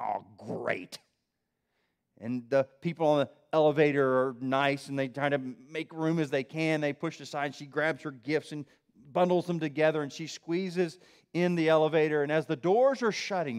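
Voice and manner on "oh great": very low, soft, sour, grumpy mutter. Retelling a story of a shopper facing a full elevator: imitating a grumpy mutter. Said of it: "mutters to herself in a grumpy way".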